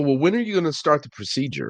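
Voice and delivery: irritated, impatient, mad tone with swooping pitch. Retelling own complaint to the doctor after waking up: imitating being mad. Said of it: "I can remember being mad".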